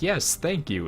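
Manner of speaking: put-on cheeriest voice possible, overly bright, high. Retelling his answer to a guy who just called him an ass, in the cheeriest voice. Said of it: "in the cheeriest voice possible".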